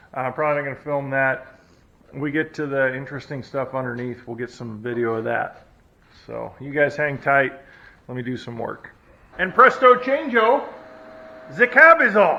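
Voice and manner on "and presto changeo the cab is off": high, loud, put-on German accent. Announcing to viewers that the cab is off, in a put-on German accent. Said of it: "I don't know why I did that in a German accent".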